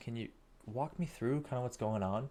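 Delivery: curious, engaged, inquisitive rising tone. Showing tonality while asking about a business's lead flow: curious, interested tone. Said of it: "Notice the curiosity and the tonality in my voice".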